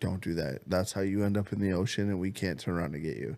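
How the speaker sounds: usual speaking voice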